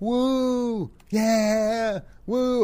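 shrill, very high, very loud, drawn-out excited woo scream. An interviewer describes a phone-call video, imitating a woman screaming in the background. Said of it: "I'm not doing a very good imitation".

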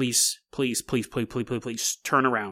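desperate, repeated pleading, begging tone. Retelling a passenger begging the driver to turn the car around: imitating someone begging. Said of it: "Ricky begins begging Justin".

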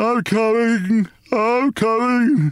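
drowsy, slow, drawn-out high wail. Father, just awakened by battering on the attic door, answers; slow, sleepy wail. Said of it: "he wailed in a slow, sleepy voice".

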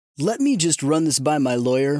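ordinary talk, nothing marked

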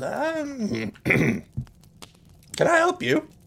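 put-on very high, very slow old orc woman voice. Voicing an elderly orc woman behind the counter greeting a customer: elderly orc woman voice. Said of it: "she looks up at you and says".

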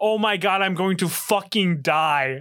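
mock half-screamed yell, mild. Retelling being sent flying while a mother laughed, re-enacting a scream. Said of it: "I'm just screaming".

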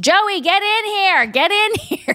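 sudden, very high-pitched, shrill yell. Recapping a scene, act out a character yelling for someone: retelling a yell. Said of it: "Then she immediately yells".

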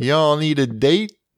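put-on Memphis, Tennessee accent. Joking to the show's Memphis listeners: Memphis accent impression. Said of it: "That was a great Memphis accent you just did".

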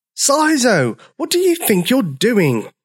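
very high outcry, all together, drawn out. All the dinosaurs call to sizo as he keeps dancing, crying out. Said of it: "Cried all the dinosaurs".

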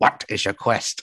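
mock elderly man voice. Speaker compares a character's voice to others, doing the old guy at the bridge voice. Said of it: "like the old guy at the bridge".

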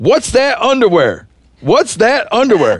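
put-on very high, swooping, screaming little kid voice. Retelling a two-year-old's reaction at night: imitating a child screaming. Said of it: "he is screaming".

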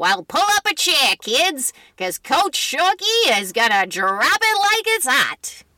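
put-on, old-fashioned, old-timey storyteller voice. Answering someone puzzled by the episode's title, in an old-timey voice. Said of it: "That did not really go with that old-timey voice".

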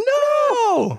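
mock, very high screamed "no". Retelling the end of a movie: imitating someone screaming no. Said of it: "she starts screaming like".

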